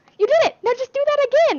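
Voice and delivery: mock very high, loud, delighted, thrilled voice. Retelling what the speech therapist said after a success: imitating an excited therapist. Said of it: "I'm like".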